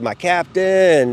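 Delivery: stretched-out high-pitched shout.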